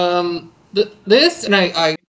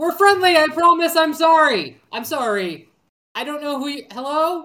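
high, raised, in-character shouting; 9 semitones higher than usual. Calling out in character into a loud cavern: yelling in character. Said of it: "as he yells that".

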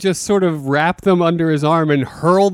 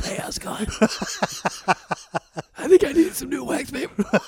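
breathed out with almost no voice; 8 semitones higher, 7 dB quieter than usual. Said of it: "He was no voice, all breath".

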